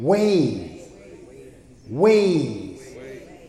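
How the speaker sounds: stress on ways, repeated each time. Speaker teaching on Psalm 25:4 to listeners, stressing 'ways'. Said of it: "put an emphasis on that way".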